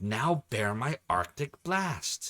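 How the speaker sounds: mock stiff, wooden line reading. Quoting the character Noon's attack line: imitating wooden acting. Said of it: "The most wooden acting in the world".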